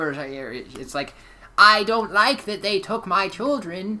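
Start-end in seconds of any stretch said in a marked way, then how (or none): 1.6-4.0 very high, loud, stiff, shrill wooden delivery. Describing an actress's terrible voice acting, mocking stiff bad voice acting. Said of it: "really awful and, like, stiff".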